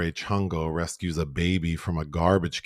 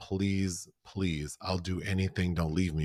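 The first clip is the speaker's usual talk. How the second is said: put-on pleading tone, quieter; 5 dB quieter than usual. Retelling a film scene where a woman begs a man: imitating someone begging. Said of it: "she's begging Rodolfo".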